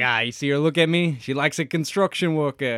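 overdone fake New York accent. Retelling what a construction worker said as a girl walked past; put-on New York accent. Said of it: "more of an actual New York accent than I'm doing".

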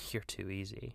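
softly, with a laugh. [name] speaking into Billy's ear, quiet, laughing. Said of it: "[name] says quietly, laughing into Billy's ear".

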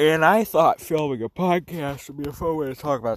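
words stretched through a loud yawn. Introducing a podcast, the speaker talks while yawning. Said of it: "I'm fucking yawning".

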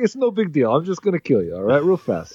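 put-on, swooping Russian accent. Riffing on whether a character is a mobster, Russian accent. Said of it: "we got Russian".

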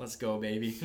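ordinary delivery

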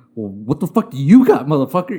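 mock, prickly, defensive and combative tone. Retelling how Covino reacted when caught out: imitating Covino getting defensive. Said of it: "you get all defensive".

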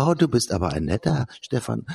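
high-pitched doll voice. Discussing the Barbie stereotype of women, speaking as the doll: Barbie doll voice. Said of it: "etwas höhere Stimme angelegt".

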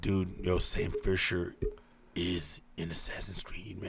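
slow, airy, breathy, drawn-out drawl. Mocking the other speaker's rambling game theory: imitating Tommy G. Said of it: "my boy Tommy G's over here is like".

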